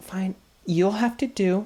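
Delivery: snooty, haughty small fairy voice. Voicing a small haughty fairy entering a workshop: snooty haughty fairy voice. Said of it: "She looks super snooty".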